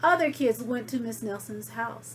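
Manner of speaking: ordinary delivery, nothing marked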